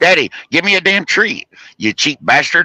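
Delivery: very high put-on dog voice. Speaker retells a man talking to himself for his dog; imitating a dog's voice. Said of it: "he starts talking to himself in the dog's supposed voice".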